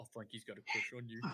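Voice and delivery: very quiet half-whisper, close into an ear. Half-whispering a secret into a character's ear while riding: half-whispering in character. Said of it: "whisper in her ear".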